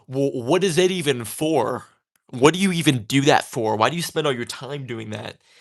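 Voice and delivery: put-on passive-aggressive, pointed, needling tone. Imitating people who ask why you do tatting: imitating a passive-aggressive tone. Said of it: "they say it like a passive aggressive way".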